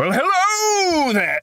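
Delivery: very high, over-the-top theatrical, stretched-out "hello". Actor explains loving over-the-top characters, then shows a John Lithgow-style big voice. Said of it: "went to the John Lithgow School of Voice Acting".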